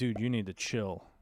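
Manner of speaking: normal talking voice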